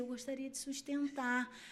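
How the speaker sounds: tiny, small, weak, timid voice. Retelling her own words at a court hearing, in a small weak voice. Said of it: "com aquela vozinha assim".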